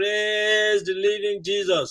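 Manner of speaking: high, long drawn-out exclaimed cry. Retelling how an interviewer stood up during the play meeting: imitating someone screaming. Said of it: "stood up and screamed".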